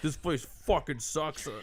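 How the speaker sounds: grumbling, pointed tone, loud enough to be overheard. Retelling a customer walking out of a pet store: imitating a customer raising their voice. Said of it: "they purposely raise their voice".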